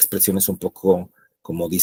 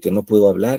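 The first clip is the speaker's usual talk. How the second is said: normal talking voice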